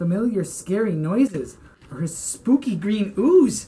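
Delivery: plain reading voice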